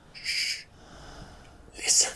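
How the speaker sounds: hushed, breathy whisper under the breath. Narrating a scene among prisoners and voicing Rudy's line, whispered. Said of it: "he whispers".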